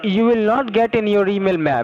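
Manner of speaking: shouting. Answering an eighty-two-year-old woman's questions about a form: yelling. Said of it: "Why are you yelling at an eighty-two-year-old woman?".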